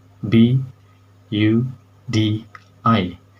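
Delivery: very slow, robotic, letter-by-letter separate letters. Spelling the name Budi without connected spelling: pauses between letters B, U, D, I. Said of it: "tanpa menggunakan connected spelling ... Jatuhnya seperti robot spelling".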